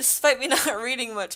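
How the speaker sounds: ordinary delivery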